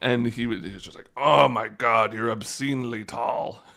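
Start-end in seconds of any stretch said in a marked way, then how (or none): 1.2-3.5 put-on slow, drawn-out old professor voice. Retelling what a professor said after a student stood to read: imitating an old professor's voice. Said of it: "he was this kinda old guy who talked like this".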